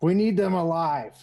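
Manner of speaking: loud yell in a character voice. Yelling an order to the others in a fight: in-character yell. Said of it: "I'm just gonna yell".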